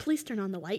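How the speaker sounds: ordinary talk, nothing marked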